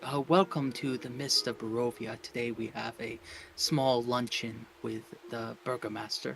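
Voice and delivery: soft, unhurried, hushed public-radio host delivery. Joking during a live stream's technical trouble: quiet NPR radio voice. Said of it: "talk really quiet like we're on N P R".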